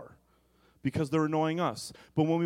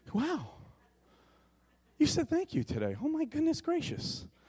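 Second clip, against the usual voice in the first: very high, swooping, astonished gushing voice; 11 semitones higher, 3 dB quieter than usual. Retelling a wife's reaction to being thanked: imitating someone surprised. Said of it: "she always seems surprised".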